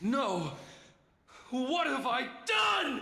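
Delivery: very high, loud shouted cry. A character in a game cutscene reacts to what he has done: yelling. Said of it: "Why are you yelling?".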